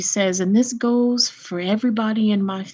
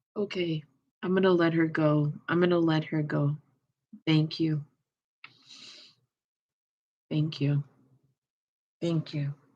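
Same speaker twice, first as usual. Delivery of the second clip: crying, tearful, lower and quieter; 4 semitones lower, 7 dB quieter than usual. Letting a departed loved one go after passing on her messages, crying while talking. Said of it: "why are you crying?".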